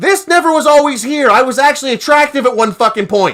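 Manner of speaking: very loud, shrill, high-pitched outburst. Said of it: "Sorry about your ears".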